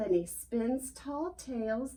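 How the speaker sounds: ordinary delivery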